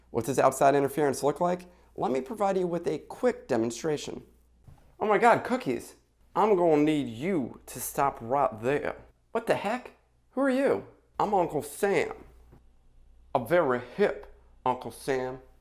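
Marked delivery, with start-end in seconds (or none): 11.2-15.4 put-on Southern US accent. In a quick demonstration, Uncle Sam introduces himself; Kevin Spacey's awful southern accent. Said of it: "trying to recreate Kevin Spacey's awful southern accent".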